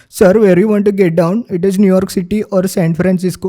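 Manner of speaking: put-on clichéd Indian accent. Showing how movies portray an Indian taxi driver, in a stereotyped Indian accent. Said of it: "this happens with Indian accent also".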